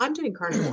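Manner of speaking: quiet, offhand mumble under the breath. Retelling a remark made on the drive back from the lake: imitating Tom muttering under his breath. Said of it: "kind of under his breath, he was like".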